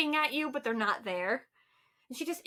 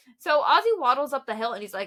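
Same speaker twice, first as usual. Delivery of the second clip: ordinary talk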